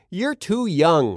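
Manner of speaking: ordinary delivery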